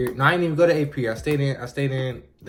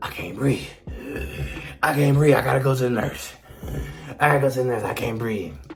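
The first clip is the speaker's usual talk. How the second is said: acted fake breathlessness. Retelling faking a health scare in class to get out: imitating faking a breathing attack. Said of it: "acting like my heart was messing".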